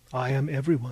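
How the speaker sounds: ordinary delivery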